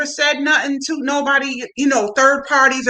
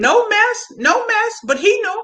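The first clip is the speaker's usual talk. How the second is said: ordinary delivery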